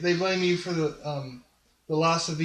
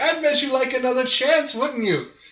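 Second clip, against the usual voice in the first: high, loud, jeering, mocking taunt; 8 semitones higher, 7 dB louder than usual. Retelling what a god says to the skulls: imitating a mocking god. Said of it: "It's like mocking them".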